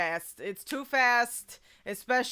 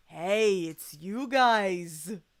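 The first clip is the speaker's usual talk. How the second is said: light put-on New York accent. Reading a game character's lines aloud: light soft New York Gumshoe voice. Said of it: "light, soft Gumshoe today".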